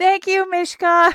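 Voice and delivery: shrill shouted yell, very high and loud. Calling thanks to Mishka down the well: yelling. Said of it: "I yell".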